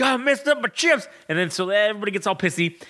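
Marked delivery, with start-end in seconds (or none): 0.0-1.1 put-on American southern accent, pitched higher. Retelling a wrestling segment, imitating Otis answering about chips. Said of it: "typical old boy fucking, like, you know, southern".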